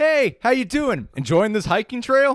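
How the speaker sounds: mock, very high, loud, cheery friendly voice. Contrasting other states with california, imitating a friendly greeting. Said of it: "Every other state I've been to is like".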